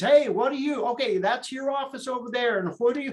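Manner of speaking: high-pitched, loud hollering yell. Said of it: "he'd yell at the kids".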